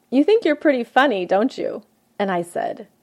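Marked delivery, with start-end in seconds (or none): none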